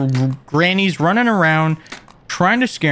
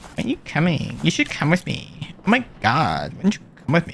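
mocking sassy tone, quieter; 6 dB quieter than usual. Imitating a game character who keeps asking why they aren't coming: imitating a sassy voice. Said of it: "just sassy".

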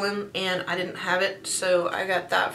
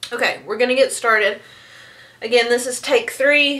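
winded, catching air, raised voice; 4 semitones higher, 8 dB louder than usual. Starting take three of a recording after quieting the dogs, out of breath. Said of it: "So I'm out of breath".

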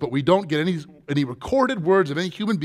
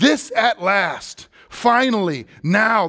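very slow, passionate, longing, drawn-out, raised exclaiming; 5 semitones higher, 3 dB louder than usual. Acting out the first man's words on seeing the woman: imitating Adam's passionate exclamation. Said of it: "The passion in his voice".

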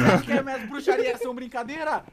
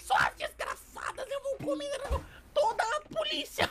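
very high, swooping put-on witch voice; 14 semitones higher, 7 dB quieter than usual. Asked who does the best witch voice, a speaker volunteers one, witch voice. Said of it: "Quem faz a melhor voz de bruxa aí?".

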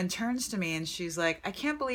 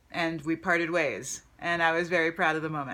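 ordinary delivery

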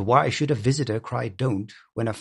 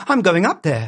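high, loud, trembling cry, voice shaking; 7 semitones higher, 6 dB louder than usual. Reading a story, a woman springs from her chair after a scream: crying out, trembling. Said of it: "she cried, trembling".

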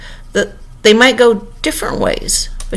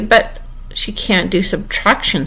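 ordinary delivery

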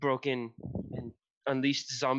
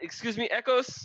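very high-pitched, loud shout; 10 semitones higher, 3 dB louder than usual. A player character calls out to echoes for help, yelling. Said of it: "I'm gonna yell at Echoes".

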